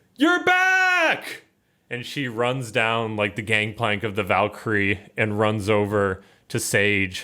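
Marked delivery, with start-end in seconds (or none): 0.2-1.4 high, shrill, thrilled scream, drawn out. Storyteller voicing Fira as she greets the returning group: Fira screaming. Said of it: "she screams like".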